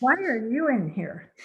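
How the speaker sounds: plain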